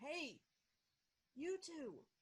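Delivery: calling out loudly. Calling out again in character to two strangers: calling out louder. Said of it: "I say again louder".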